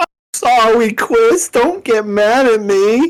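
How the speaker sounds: put-on slow, drawn-out anime girl voice. Retelling what a guy said after losing his papers: anime girl voice. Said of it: "now you sound like an anime girl".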